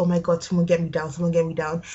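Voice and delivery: ordinary talk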